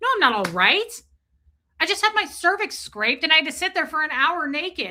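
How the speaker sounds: acted-out mad, irritated tone. Retelling answering a call after a medical appointment: retelling angry reply. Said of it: "I was mad at her".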